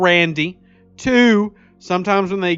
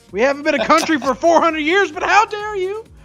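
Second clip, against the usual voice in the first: mock outraged old woman voice, higher; 10 semitones higher than usual. Imitating elderly grandmothers knitting sweaters and cussing out the stream: imitating indignant grandmothers cussing. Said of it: "cussing out this stream, going".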